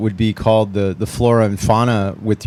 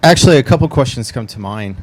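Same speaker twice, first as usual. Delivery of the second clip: loud, too loud into the microphone. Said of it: "I'm sorry, I'm so loud".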